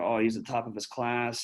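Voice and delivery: ordinary talk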